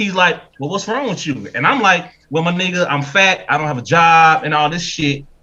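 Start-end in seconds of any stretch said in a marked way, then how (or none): 0.6-1.5 gentle, effeminate tone. Acting out calling in as Kevin Samuels replies, in an effeminate Kevin Samuels impression. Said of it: "his effeminate ass voice".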